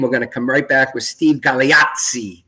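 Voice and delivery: put-on Italian accent. Announcing a break before the guest returns, mock Italian accent. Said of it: "I'm going to say this like an Italian".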